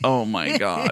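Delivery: put-on laughing while talking. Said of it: "on the ice just laughing".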